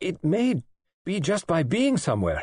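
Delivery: forceful vehement insistence. A woman answers a question, with vehemence. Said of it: "She said with vehemence".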